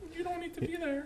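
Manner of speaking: high, soft dismissive put-on voice. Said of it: "it's like".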